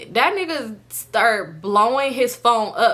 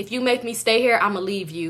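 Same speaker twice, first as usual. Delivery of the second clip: usual speaking voice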